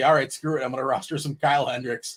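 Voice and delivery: ordinary talk, nothing marked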